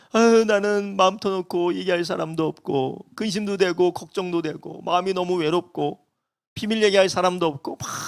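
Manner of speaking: imitated child voice, soft and close to crying. A parent retelling their child's words before bed, imitate the child near tears. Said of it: "저희 자녀가 울먹이면서".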